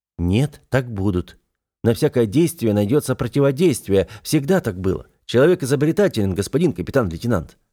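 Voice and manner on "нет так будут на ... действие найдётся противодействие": usual speaking voice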